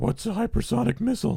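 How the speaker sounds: very high squeaky put-on voice with a rasp. Discussing hypersonic technology, speaker imagines what Jen would say: Jen impression. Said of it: "That's his impersonation of Jen".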